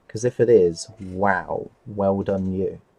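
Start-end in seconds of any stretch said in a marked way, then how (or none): 0.9-2.7 very slow, drawn-out, condescending, patronizing tone. Complimenting someone on their model build: sounding patronizing. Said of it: "that actually sounded really patronizing".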